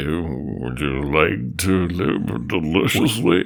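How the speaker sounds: hushed, barely-there, near-half-whispered stage whisper. Imitating a film character's line: imitating a bare half-whisper. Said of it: "he barely whispers that".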